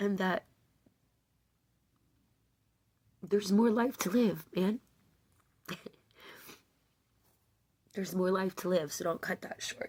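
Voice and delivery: speaking through tears. Speaking to an audience, crying while talking. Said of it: "I didn't know I was gonna be crying".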